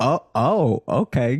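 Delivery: put-on courteous, polite, nice little "oh, okay". Retelling how she reacted on the date: imitating a polite reply. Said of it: "Still trying to be polite".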